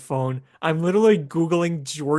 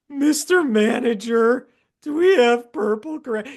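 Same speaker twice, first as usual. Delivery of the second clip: put-on high, loud nerdy cartoon kid voice; 5 semitones higher, 5 dB louder than usual. Retelling an old man in a suit asking the manager, nerdy kid from The Simpsons voice. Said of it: "He's like that nerdy kid".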